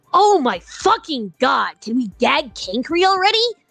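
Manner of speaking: put-on cartoon-character rant, high and loud. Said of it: "in what I can only assume I should be reading in a Carcat voice".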